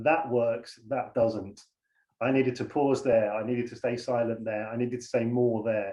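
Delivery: plain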